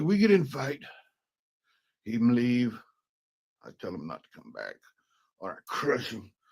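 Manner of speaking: put-on clumsy, broken-English German accent with swooping pitch. Retelling what a woman said about her boyfriend, in a bad german accent. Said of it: "I can't do a German accent".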